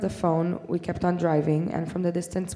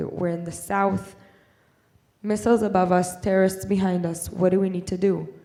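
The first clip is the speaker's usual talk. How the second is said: normal talking voice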